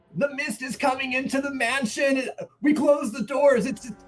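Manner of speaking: panicked screaming. Player's character runs up the stairs warning the others, panicked screaming. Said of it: "I come up the stairways screaming".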